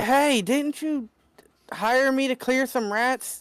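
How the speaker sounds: very high-pitched, shrill yell. A player has his character yell at two drunk people, yelling out. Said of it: "I'm going to be yelling out".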